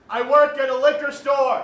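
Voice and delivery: very loud, shrill, high-pitched shout. Answering "where do you work?" after a request to repeat it louder: shouting. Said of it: "You don't have to shout at me".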